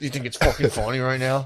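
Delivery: full, stern, strict fatherly scolding voice. Acting out going full stern daddy during sex: put-on stern daddy voice. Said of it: "go full stern daddy and be like".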